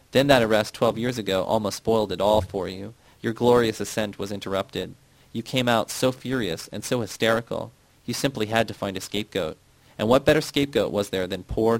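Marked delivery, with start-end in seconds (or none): none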